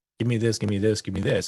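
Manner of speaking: ordinary talk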